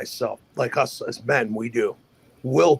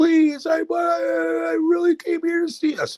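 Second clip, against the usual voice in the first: put-on tearful, crying voice, higher. Retelling an ex's begging words to another speaker: imitating someone crying. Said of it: "She was crying".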